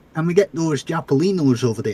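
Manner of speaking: put-on thick, heavy Scottish accent. Imitating how she says a word, in a thick Scottish accent. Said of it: "in the thickest Scottish accent".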